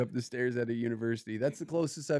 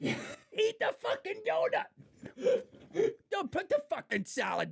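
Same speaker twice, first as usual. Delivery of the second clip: put-on screaming coach voice, higher. Joking about coaching a friend as a food dad: acting out a screaming food dad. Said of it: "screaming at you".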